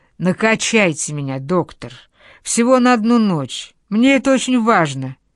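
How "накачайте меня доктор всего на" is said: ordinary delivery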